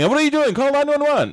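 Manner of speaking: very high-pitched mock yell.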